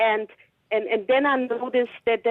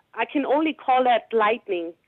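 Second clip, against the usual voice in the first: ordinary talk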